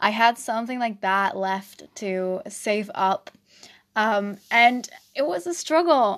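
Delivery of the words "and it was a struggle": loud voice, breaking and cracking mid-line. Talking on your podcast when your voice suddenly goes odd: voice cracking. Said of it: "Oh my God, my voice. Did you hear that?".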